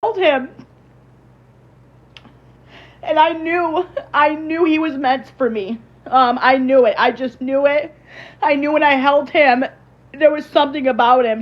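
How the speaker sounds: tearful, close to crying. Recalling the moment they first held him, getting emotional, close to crying. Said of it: "I'm sorry, I don't really cry".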